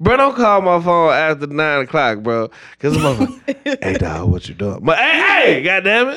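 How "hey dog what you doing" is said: deep, very low, dropped-down voice. Complaining about someone calling after nine o'clock, imitating a low voice. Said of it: "don't be talking to me all low and shit".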